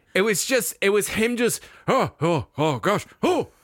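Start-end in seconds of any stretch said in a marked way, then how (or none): 1.8-3.4 sputtering stammer on the opening sounds. Mimicking a comedian's attempt at the Robin Williams voice: imitating a Robin Williams impression. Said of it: "the way he does Robin Williams is just doing the voice".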